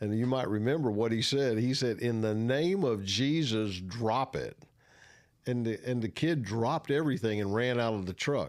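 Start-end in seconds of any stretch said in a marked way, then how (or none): none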